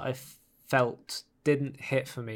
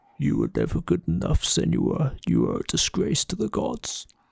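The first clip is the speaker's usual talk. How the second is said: loud, rough, deep put-on monster growl; 5 semitones higher, 5 dB louder than usual. Trying out a voice line for a blackened monster, in a really deep monster voice. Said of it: "trying to put on a really deep voice for a blackened monster".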